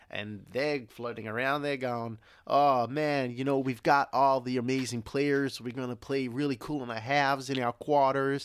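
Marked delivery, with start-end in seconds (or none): 1.6-8.4 put-on American accent throughout. Imagining what the US team says about their tournament group; American accent. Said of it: "That's my American accent out".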